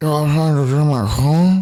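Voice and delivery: drunk man impression. Telling a story, the speaker imitates a drunk man talking to another man. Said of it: "He says it like this".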